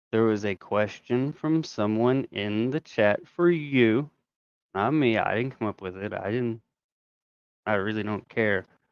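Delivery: very slow, soft, deliberate delivery, spelled out. Speaker addressing Lauren about a chat question, speaking very slowly. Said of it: "so I'm going to speak very slowly".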